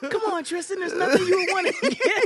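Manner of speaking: very high, loud, belted cartoon voice. Quoting her best friend at a birthday in Cancun, in a Spinelli from Recess voice. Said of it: "like like like Spinelli from Recess".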